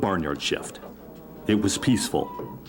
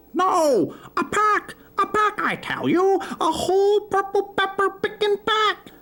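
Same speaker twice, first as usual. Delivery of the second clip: very high, slow, hen-like clucking; 4 dB louder than usual. Reading a story where a hen answers a question about stolen peppers, clucking hen voice. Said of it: "she clucked, / She answered".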